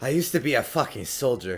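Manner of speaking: muttering under breath. In a role-play scene, a character mutters where their brother will hear, muttering under breath. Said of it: "I mutter under my breath".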